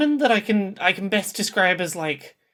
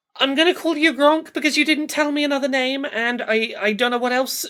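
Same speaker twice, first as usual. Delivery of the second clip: calling out in character voice, pitched up; 6 semitones higher than usual. Playing a character who tries reaching a hacked friend: shouting in character. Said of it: "so she's gonna shout".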